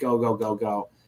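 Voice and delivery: ordinary talk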